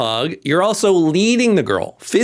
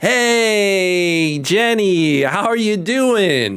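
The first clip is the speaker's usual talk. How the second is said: very slow, warm, friendly tone with stretched vowels; 2 semitones higher than usual. Showing how to greet Jenny for a bear hug, warm, positive, stretched vowels. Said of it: "I'm stretching out the vowels. ... Warmth in the voice, positivity in the voice".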